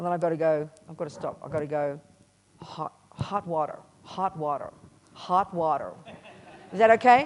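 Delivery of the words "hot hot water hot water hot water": slow, put-on American accent. Retelling asking for hot water, speaking like an american: put-on american accent. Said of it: "I've got to speak like an American sometimes".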